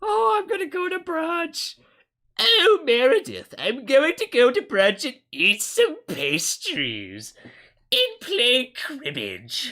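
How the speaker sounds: very high, swooping sing-song voice. Speaker riffing on brunch during the coronavirus, Nancy Pelosi impression. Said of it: "That's my Nancy Pelosi impression".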